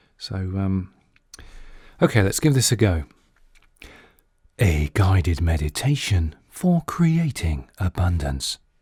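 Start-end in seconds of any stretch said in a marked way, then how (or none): 4.6-8.6 deep, whispery voice at lower pitch. Recording a guided-meditation voiceover, in a deep, whispery voice. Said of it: "my deep, whispery voice".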